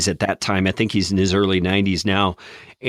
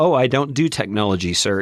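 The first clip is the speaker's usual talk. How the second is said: put-on endearing British accent; 2 semitones higher than usual. Retelling what a wanted show guest said before hanging up: endearing British accent. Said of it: "in his endearing British accent".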